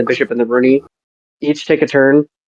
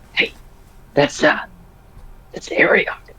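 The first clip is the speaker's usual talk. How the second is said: hushed, breathy whisper; 2 semitones higher, 7 dB quieter than usual. As a cloaked figure whispering to the other one, whispering. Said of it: "like whisper to the other one".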